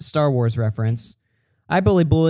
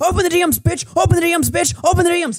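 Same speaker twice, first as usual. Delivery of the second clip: mock very high, enraged, furious screaming. Recounting a fight over dms, re-enacting own screaming. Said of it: "I started screaming".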